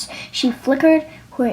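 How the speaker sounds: plain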